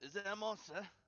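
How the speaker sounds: high-pitched in-character shouting. Voicing Weirin calling out a question from below: yelling out in character. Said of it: "you hear Weirin just yell out".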